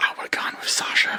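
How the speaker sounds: hushed whisper. Answering a whispered question about a creature's name, whispering. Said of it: "Why are we whispering that?".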